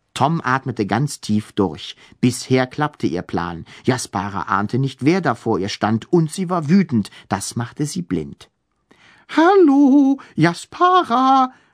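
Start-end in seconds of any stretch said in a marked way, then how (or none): 9.3-11.5 very high, piping, flute-like voice. Tom greets Jaspara while trying to speak like a ghost, fluting in a high voice. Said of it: "flötete Tom mit hoher Stimme".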